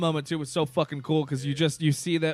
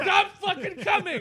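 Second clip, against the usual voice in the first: put-on crying outburst, higher. Retelling how a theater worker came in and started crying: imitating someone crying. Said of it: "he starts crying".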